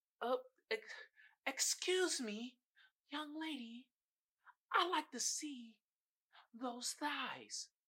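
creepy, soft, slow, put-on British accent. Imitating a creepy london cab driver, in a british accent. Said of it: "Am I British accent right?".

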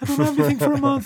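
high-pitched, rapidly rattled-off panicked outburst.

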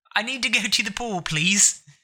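polite put-on British accent. Demonstrating accents with others listening: proper British accent. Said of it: "there's the proper British accent".

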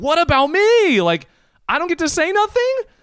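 shrill, very high, loud scream. Retelling his own thoughts while two girls trade dares: imitating his own inner scream. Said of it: "in my head, I'm screaming".

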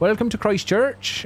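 put-on heavy Christchurch accent, very high-pitched. Recalling a Christchurch lady's greeting, thick Christchurch accent. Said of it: "had the thickest... Sorry about that accent".

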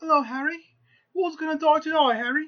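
put-on over-the-top, super British accent, pitched way up. Mocking the gloomy later movies' characters: exaggerated British accent. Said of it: "they're super British".

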